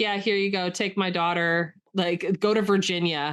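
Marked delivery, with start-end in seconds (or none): none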